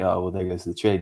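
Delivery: ordinary delivery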